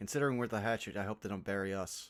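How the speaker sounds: low, mumbled mutter under the breath. Praedicots speaks to Domf, muttering under his breath. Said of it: "Under his breath to Domf".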